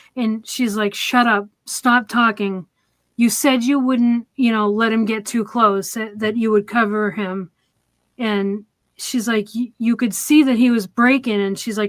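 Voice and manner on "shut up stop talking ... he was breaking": normal talking voice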